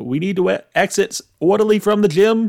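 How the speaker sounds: put-on Boston-accented speech. Describing how a man sounds, quoting him in a weird Kennedy Boston accent. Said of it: "he has like a weird Kennedy Boston accent. He's like".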